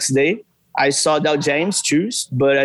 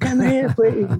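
excited, eager, very high-pitched shout; 10 semitones higher than usual. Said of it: "Like a real fan".

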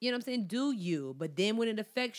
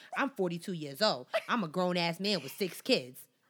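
mock-sassy, put-on male voice; 2 semitones lower than usual. Imitating a father of six insisting he is grown, imitating a sassy man. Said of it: "He was real sassy with it".

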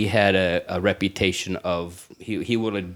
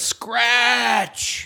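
put-on yelled high, drunk-sounding. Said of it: "Guy just yelled".

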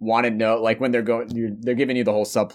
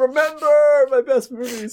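shrill shout pitched very high; 4 dB louder than usual. Joking that an actor wants his best movies remembered: Christopher Plummer shouting. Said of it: "like he's Christopher Plummer shouting".

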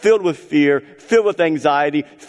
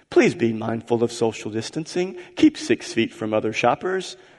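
put-on robotic female store announcer voice; 6 semitones lower, 5 dB quieter than usual. Describing looping loudspeaker messages outside a store, doing a robotic female announcer voice. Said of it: "they have this robotic-sounding female voice".

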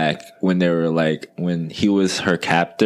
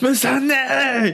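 put-on grieving cry, higher. Imitating a character calling out on a beach: Grey Worm voice. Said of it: "I sound like Grey Worm".

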